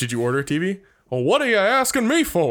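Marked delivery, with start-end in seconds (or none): 1.1-2.5 cartoon rooster voice, pitched high. Imagining delivering a TV, the man at the door answers: Foghorn Leghorn voice.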